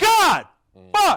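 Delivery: loud, shrill, very high yelling into mic. Speaker reacting on air, yelling into the microphone. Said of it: "I just yelled into the microphone".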